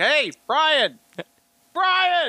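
put-on hollering across, pitched very high. Retelling calling to someone across escalators: retelling own yell. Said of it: "I yelled at him from one escalator to the other".

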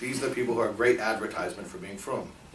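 sarcastic, ironic, tongue-in-cheek tone. Repeating an earlier remark to listeners who missed it: sarcastic, said with a wink. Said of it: "I'll say it again with a wink".

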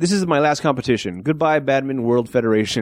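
ordinary talk

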